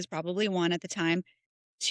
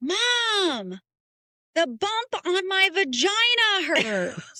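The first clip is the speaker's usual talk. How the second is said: put-on very high, very slow child's yell; 11 semitones higher, 5 dB louder than usual. Retelling how a child yelled across the store: imitating a child yelling. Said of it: "she yells across the store".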